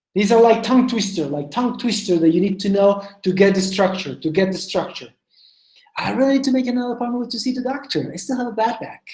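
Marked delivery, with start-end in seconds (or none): 6.0-9.1 fast, rattled-off delivery. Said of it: "Can you say it quickly?".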